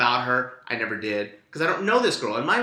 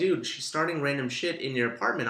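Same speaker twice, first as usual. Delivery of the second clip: ordinary talk, nothing marked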